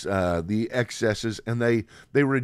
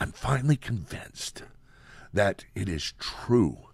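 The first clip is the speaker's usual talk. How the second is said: put-on whisper, quieter; 3 dB quieter than usual. A man acts out announcing news to his wife; Joe Biden impression, whispered. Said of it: "I'm going to do Joe Biden".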